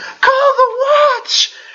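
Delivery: very high-pitched woman's screaming cry. Narrator describing the crowd's reactions, voicing a woman screaming. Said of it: "You hear a woman scream".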